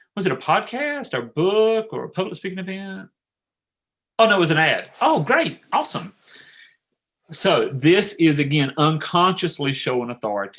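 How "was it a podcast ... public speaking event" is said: curious, interested tone with pitched-up rise. Example question about where someone heard of you, in a curious questioning tone. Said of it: "And you do it curious, that tone out, hear my tonality?".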